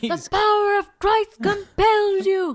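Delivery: mock passionate cry, very high, drawn-out scream. Recapping a TV scene, doing the incantation as Giles: imitating Giles screaming. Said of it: "he's screaming like".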